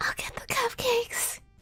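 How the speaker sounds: mild, eager, reined-in shouty call. Imagining a character from the game yelling her line: imagining a character yelling. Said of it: "I'm just imagining her just yelling".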